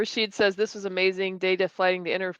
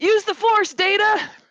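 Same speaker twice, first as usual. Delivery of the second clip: very high, drawn-out shout; 13 semitones higher, 7 dB louder than usual. Retelling a funny line shouted out in the theater: retelling own shout. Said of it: "I shouted out a funny line".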